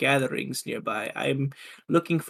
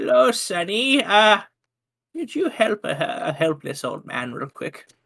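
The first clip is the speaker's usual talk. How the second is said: put-on helpless, doddering old man voice, pitched up; 6 semitones higher, 4 dB louder than usual. Player pretends to be a helpless old man to a guard: doddering old man voice. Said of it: "bring out more of my doddering old man".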